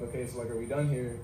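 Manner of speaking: ordinary talk, nothing marked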